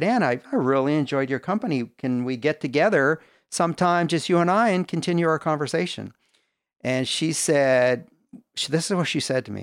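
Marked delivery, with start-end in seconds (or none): none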